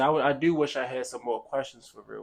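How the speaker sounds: normal talking voice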